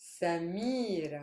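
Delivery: Samira with middle syllable mi stressed. Explaining where the stress lies in a name: stress on middle syllable 'mi'. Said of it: "I'm stressing the me".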